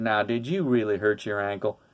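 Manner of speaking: easygoing, slow southern drawl, stretched vowels. Retelling what a football player said to him: imitating a southern drawl. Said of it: "in his southern drawl".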